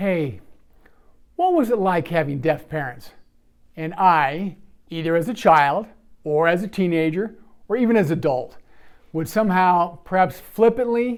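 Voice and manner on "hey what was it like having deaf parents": hushed, quiet, solemn and somber delivery. Retelling how people asked about having deaf parents: imitating a quiet, somber question. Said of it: "a quiet voice".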